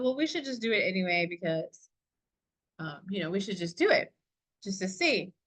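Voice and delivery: ordinary talk, nothing marked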